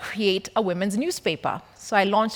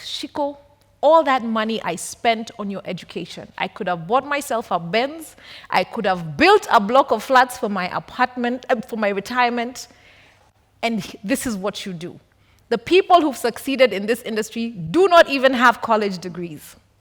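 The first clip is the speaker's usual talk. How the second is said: ordinary talk, nothing marked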